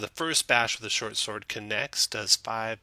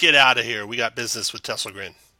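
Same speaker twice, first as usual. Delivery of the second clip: booming, loud, haughty, arrogant delivery; 9 dB louder than usual. Voicing an intruder who strides into the room: arrogant NPC ordering others out. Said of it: "all arrogant looking, and says".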